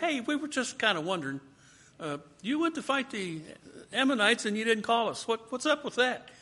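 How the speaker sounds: high, quick, mild mock-polite voice.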